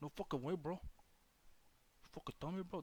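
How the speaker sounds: put-on Mexican accent. During a show with technical difficulties, the host demonstrates his Mexican accent voice. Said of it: "That's my Mexican voice".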